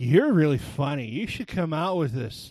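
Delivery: mock boozy, affected, loud drunken party voice. Retelling what a woman said to the speaker, imitating a drunk woman. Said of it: "the affectation I put on my voice, she had been drinking a lot".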